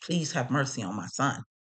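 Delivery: put-on begging, pleading voice. Retelling a mother's plea at the sentencing: imitating someone begging. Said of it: "she was begging, like".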